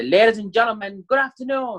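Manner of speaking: voice lifted very high. Opening a talk to a tired audience, greeting them with a raised tone of voice. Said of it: "a high tone of voice ... So raise your tone of voice at the beginning".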